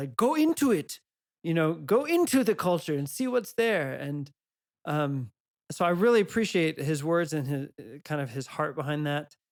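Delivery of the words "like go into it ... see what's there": put-on faint touch of Dutch accent. Imagining a thinker you admire saying this, in his little Dutch accent. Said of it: "with his little Dutch accent".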